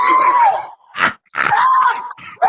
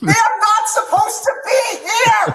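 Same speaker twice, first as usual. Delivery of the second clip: very low-pitched, indignant, angry tone; 12 semitones lower than usual. Arguing while being told to lower the voice: loud angry voice. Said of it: "If you don't lower your voice".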